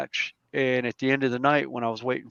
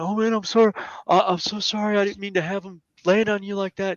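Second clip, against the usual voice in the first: mock, high-pitched voice on the verge of tears; 7 semitones higher than usual. Retelling a guy apologizing to him after a fall; imitating someone almost in tears. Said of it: "almost in tears".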